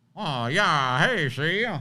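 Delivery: talking out of the side of the mouth. Imitating an actor the other speaker named: Gerard Butler impression, talking out of side of mouth. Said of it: "he does talk out of the side of his mouth".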